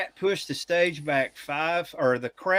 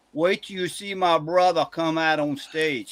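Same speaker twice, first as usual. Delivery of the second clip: put-on broad, thick, heavy Louisiana accent. Retelling what a man behind them at a concert said: thick cajun accent. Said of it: "thick, thick, thick Cajun accent".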